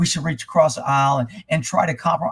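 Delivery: low, soft, mocking pleading voice.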